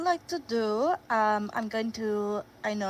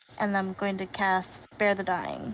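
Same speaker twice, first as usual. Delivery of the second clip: usual speaking voice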